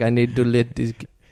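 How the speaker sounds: put-on Indian accent. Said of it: "the only reason I said it like that is 'cause the photo of the owner was Indian".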